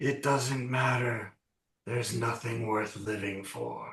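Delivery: soft, rasping, despairing creature voice. Narrating to players, voicing something speaking from inside its face: raspy creature voice. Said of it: "you hear a raspy voice come from somewhere inside of its face".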